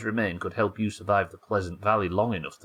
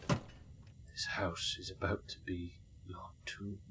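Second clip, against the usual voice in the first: mock-grave, hushed, slow, dead-serious whisper; 14 dB quieter than usual. Player repeats a line someone in the game said, imitating a serious tone. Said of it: "in a really like serious tone".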